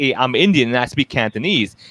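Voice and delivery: ordinary talk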